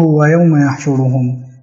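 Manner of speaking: ordinary talk, nothing marked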